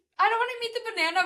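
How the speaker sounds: mock, very high, shrieked protest. Recalling once screaming right in front of the banana girl: retelling a scream. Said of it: "actually one time I screamed".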